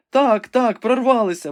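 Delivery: exclaimed, crying out. Rebecca answering Ivanhoe's question, exclaiming. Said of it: "вигукнула Ребека".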